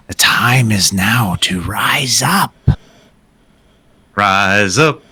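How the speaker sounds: menacing, intimidating voice, distant in the background. A narrator voicing an unseen voice from the tunnels, an ominous background voice. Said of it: "this ominous voice in the background".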